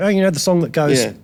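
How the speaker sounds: ordinary delivery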